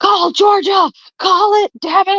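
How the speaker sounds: very high, furious, angry screaming. Retelling watching the election count late at night: imitating himself screaming angrily. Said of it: "I was screaming at the T V".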